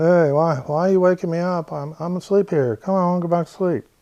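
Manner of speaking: put-on sleepy grumbling. Explaining deep sleep, acting out someone woken from it: imitating a groggy sleep-drunk person. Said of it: "You'd be groggy".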